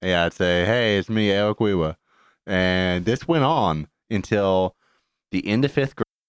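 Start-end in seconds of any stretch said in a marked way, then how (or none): 0.6-2.0 mock delivery with r sounds not pronounced. Retelling how they said their name as a child: imitating own childhood R-less speech. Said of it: "I couldn't pronounce my R's".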